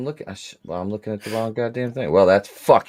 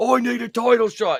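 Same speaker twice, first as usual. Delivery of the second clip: put-on loud yelling British wrestler voice. Joking about a wrestler demanding a title shot: imitating British Bulldog yelling. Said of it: "you need to stop yelling".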